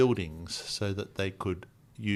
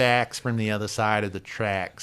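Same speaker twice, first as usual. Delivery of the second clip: ridiculous, dragged-out goofy American drawl; 4 dB louder than usual. Naming a radio show the way its host said it: Mark Cohodes's ridiculous American drawl. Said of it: "I've gotta say it in Mark's accent".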